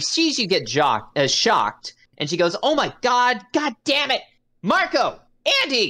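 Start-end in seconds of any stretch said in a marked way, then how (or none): 2.6-5.9 shrill, exasperated, very high angry shout. Voicing a character who sees a visitor shocked, yelling at the twins. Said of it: "And she yells at".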